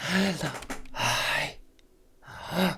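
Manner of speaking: whiny stage whisper, high-pitched. Voicing an unseen thing the players hear: whispering whiny voice. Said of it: "just something is whispering".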